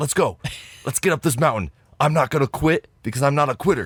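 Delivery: loud, high-pitched yelling. Recalling a shirtless guy on the mountain, the speaker mimics him: retelling a screamed pep talk. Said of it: "And he's like screaming this".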